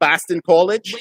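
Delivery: attempted Boston accent. Asking the others if the accent is getting better, put-on Boston accent. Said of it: "better with the accent?".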